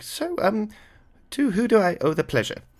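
put-on older professor voice. Voicing an older professor pushing through guards: voicing an older professor. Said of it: "He kinda looks you guys down".

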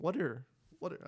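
voice cracks high on what, in what are. Starting to ask her next question, the speaker's voice cracks. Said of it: "I just voice cracked".

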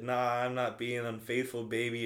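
usual speaking voice

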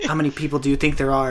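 put-on deadpan flat tone. Retelling how Joe Rogan asked a guest a question: imitating Joe Rogan's deadpan question. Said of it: "Joe Rogan asked him so deadpan".

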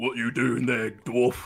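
intimidating, menacing voice. Asked by the party for an intimidating voice, threatening a dwarf: intimidating voice. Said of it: "give me your best, uh, intimidating voice".

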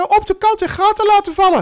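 very high, shrill, loud little voice. Quoting the former team leader's usual answer, Herman Krot's high voice. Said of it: "Het is een hoog stemmetje".

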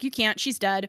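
mock sarcastic tone. Retelling her answer to people pressing her for news, retelling a sarcastic Chicagoan reply. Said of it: "I was being a sarcastic Chicagoan".

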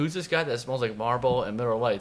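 plain

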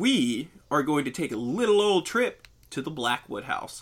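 narrator voice. Speaker starting to tell a story to a listener, in a storytelling voice. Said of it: "Storytelling voice".

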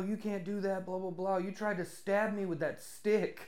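acted-out yelling. Speaker retells a younger lover yelling at his sugar daddy, retelling a yell. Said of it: "he's yelling at his sugar daddy".

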